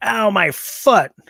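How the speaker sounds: high, slow, indignant, offended cry.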